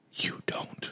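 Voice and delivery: soft, intimate whisper close to the mic. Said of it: "I'm a whisper into the mic so you know how".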